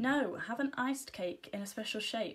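ordinary delivery

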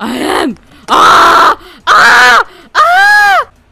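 very high, very loud, shrill swooping screaming. Racing to make it in a game, screaming into the mic. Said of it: "Did [name] just eat her mic?".

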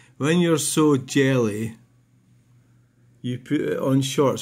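plain

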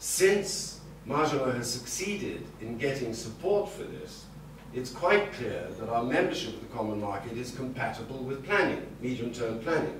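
ordinary talk, nothing marked

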